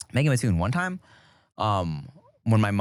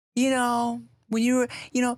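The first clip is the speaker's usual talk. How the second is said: put-on high-pitched, tipsy, slightly slurred-sounding voice. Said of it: "She was venting".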